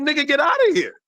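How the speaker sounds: high, dismissive, put-on brush-off voice. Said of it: "they're gonna be like".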